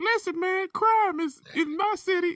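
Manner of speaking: exaggerated, very high-pitched, squeaky put-on voice. Joking that a tough guy with a high voice gets no respect: put-on high-pitched voice. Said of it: "you got to go see high pitched hair".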